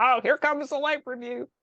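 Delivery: tiny little devil voice. Telling of a voice on their shoulder before a life review, little devil voice. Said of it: "like the little devil on my shoulder".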